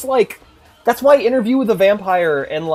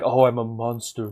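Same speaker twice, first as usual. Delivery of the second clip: mock-emo voice, lower, quieter; 6 semitones lower, 6 dB quieter than usual. Retelling a story about a vampire guy, imitating a super emo guy. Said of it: "awesome vampire guy who's like super emo".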